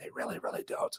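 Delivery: creepy, breathy, very hushed whisper. Saying most people don't really read their comments: creepy Biden-like whisper. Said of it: "that creepy Biden-like, uh, whisper".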